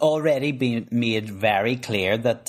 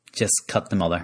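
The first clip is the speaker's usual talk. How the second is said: normal talking voice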